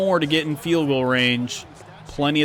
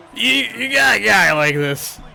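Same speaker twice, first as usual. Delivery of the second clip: loud, raised, creaky commentator voice; 6 semitones higher, 5 dB louder than usual. Right after bringing up Patrick Mahomes, do a very brief Cris Collinsworth impression. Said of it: "my very short, brief Chris Collinsworth impression".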